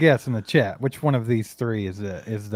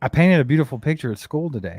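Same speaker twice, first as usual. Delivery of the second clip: put-on small child's voice; 3 semitones higher than usual. Retelling a child telling about a painting: imitating a child talking. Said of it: "I heard it again".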